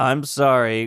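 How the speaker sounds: mock fake-sounding voice. Retelling how a friend apologized: imitating Jeff's not-genuine apology. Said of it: "Jeff just goes".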